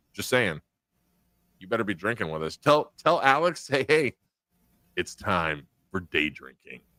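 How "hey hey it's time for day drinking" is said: super creepy, unsettling put-on voice. Suggesting what someone should say to Alex: super creepy voice. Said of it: "don't do it in that voice 'cause that's super creepy".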